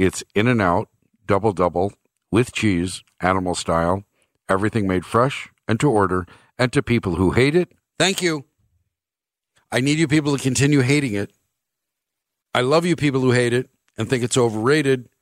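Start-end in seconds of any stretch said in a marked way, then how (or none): 0.0-7.7 very low, deep announcer-style narrator voice. Speaker settling the best-burger argument for Idahoans, in a narrator's voice. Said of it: "narrator's voice".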